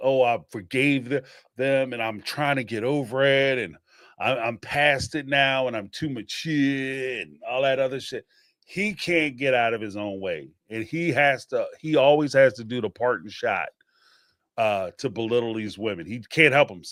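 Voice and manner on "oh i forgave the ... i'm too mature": play-acted, sarcastic, fake-magnanimous, mocking lofty tone. Mocking someone's show of forgiveness: mocking imitation of Cody, magnanimous. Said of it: "as magnanimous as he's trying to come off, like".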